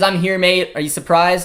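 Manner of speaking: ordinary talk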